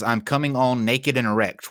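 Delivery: ordinary delivery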